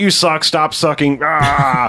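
very slow angry outburst, ah stretched long. Retelling a scene where someone blows up: imitating an angry outburst. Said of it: "Jim Brown kinda blows up".

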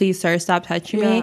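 put-on polite, pleading tone. Imitating the other speaker's polite reaction to a man touching her. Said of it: "you were so polite, you're like".

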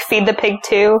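normal talking voice

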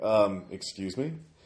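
polished, well-spoken, refined educated voice. Retelling what a caller says over the phone: imitating an educated voice. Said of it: "a educated voice".

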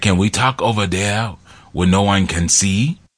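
put-on very light, barely there Austrian accent. Retelling a story about Conan and a priest, weak Austrian-accent Conan. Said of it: "my Austrian accent isn't really there".

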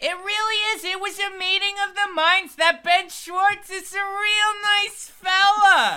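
loud, high, put-on comic character voice. A guest talks on a podcast in character: loud put-on character voice. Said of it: "You're not going to talk like this".

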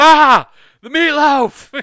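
very high, loud yell. Imagine people in their basement calling to Ma, doing the Will Ferrell thing. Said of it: "doing the Will Ferrell thing where it's like".

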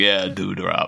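put-on condescending tone. Retelling how the security guard mocks Dewey: imitating a condescending tone. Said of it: "he's so condescending to him".

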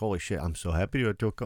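clumsy, bad put-on Swedish accent. Imitating a swedish character excited about a trip: attempted swedish accent. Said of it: "I can't do Swedish".

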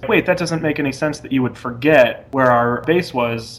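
ordinary talk, nothing marked

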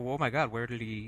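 small flicker of alarm, slight twinge of panic. Retelling a character's line after another speaker's absence is mentioned: imitating a little panic. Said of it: "a little twinge of panic".

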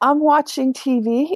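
very high, slow, vacant, dazed voice. Retelling a girl's reply when asked what she was doing: imitating a dazed girl. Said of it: "she just looked at me like in a daze".

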